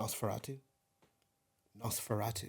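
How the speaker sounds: put-on posh pronunciation. Showing someone how to pronounce the word, with a posh accent. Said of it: "giving it a bit of poshness".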